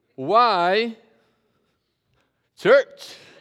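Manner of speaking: why drawn out, clean pause before church. Practicing a phrase, making a pause between why and church. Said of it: "I'm making a pause between the why and the church today".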